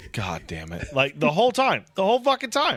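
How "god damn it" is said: muttered under breath, lower and quieter. Retelling grinding a game up to Master: imitating muttering under breath. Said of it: "under my breath".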